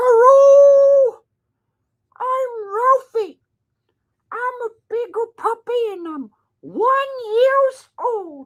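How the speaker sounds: loud, very high puppet squeak, stretched-out 'hello'. Speaking for the dog Ralph to everyone at home, Elmo-like voice for the dog. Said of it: "You kind of sound like Elmo".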